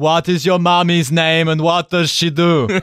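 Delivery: put-on poor Austrian accent. Pitching a Kindergarten Cop remake, acting out the lead questioning kids, bad Schwarzenegger Austrian accent. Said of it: "in a bad Austrian accent and going".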